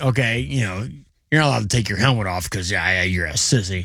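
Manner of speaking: low football coach voice, talking down. Acting out the story of a bitten player, voicing the coach, football coach voice. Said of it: "In true football coach fashion".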